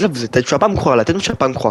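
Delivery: normal talking voice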